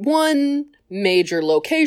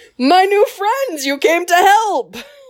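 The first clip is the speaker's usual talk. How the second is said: cheery, high, upbeat, optimistic put-on Jamaican accent; 9 semitones higher, 4 dB louder than usual. Retelling what the Jedi says to the clones, Kit Fisto in Jamaican accent. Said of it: "but in a Jamaican accent".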